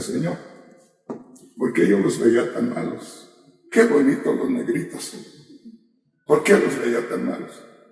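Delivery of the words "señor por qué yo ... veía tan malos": usual speaking voice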